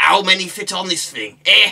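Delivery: booming, loud, clumsy put-on Lancashire accent. Quoting the pikemen's lines from the game Stronghold, in a bad Lancashire accent. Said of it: "a really bad attempt at a Lancashire accent".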